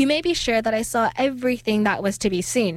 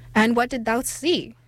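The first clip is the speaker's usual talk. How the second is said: plain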